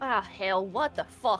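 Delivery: put-on way-too-southern accent. A player gets into character, sounding way too southern: heavy southern drawl. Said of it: "way too southern drawl".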